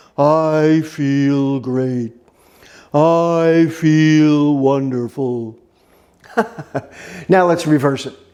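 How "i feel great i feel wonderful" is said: mopey, low voice, very slow pace. Guiding listeners to slouch and say a line, in an Eeyore voice. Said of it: "in your best imitation of Eeyore the donkey".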